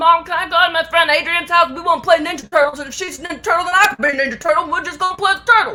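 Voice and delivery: put-on fast, high, strong southern Alabama child accent. Recalling a preschool video of herself running up to her mom; super southern Alabama accent. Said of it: "with my super southern Alabama accent".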